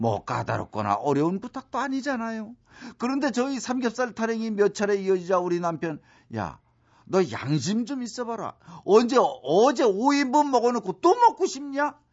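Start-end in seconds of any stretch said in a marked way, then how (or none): 6.4-11.9 put-on sudden angry outburst, climbing in pitch. Retelling how her husband answered her request to eat pork belly again, mimicking an angry outburst. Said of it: "이러면서 버럭 화를 내는 거 있죠".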